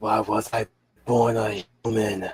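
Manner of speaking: soft, slow, unhurried, grave voice. Imitating a voice actor's character when he does speak: imitating a soft grave voice. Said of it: "he had that soft, uh, grave voice".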